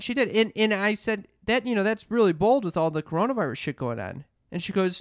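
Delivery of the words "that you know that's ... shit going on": plain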